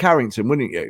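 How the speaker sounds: ordinary talk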